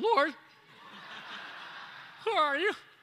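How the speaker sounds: voice lifted high into head register. Coaching a listener on how the first word should be said, high voice. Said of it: "with a high voice like that".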